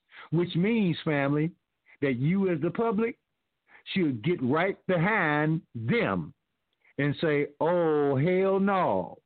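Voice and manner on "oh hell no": emphatic, leaning hard on every word. Showing the audience how the public should respond, emphatic. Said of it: "and say it with emphasis".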